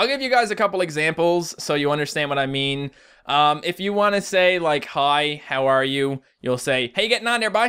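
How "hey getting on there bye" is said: Newfoundland accent, pitched up higher. Giving an example of a Newfoundland greeting, in a Newfoundland accent. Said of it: "in a Newfoundland accent".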